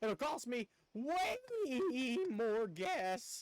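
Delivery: high voice breaking and cracking, very drawn out. Streamer talking to viewers about upcoming missions, voice cracking. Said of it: "Pardon my voice crack".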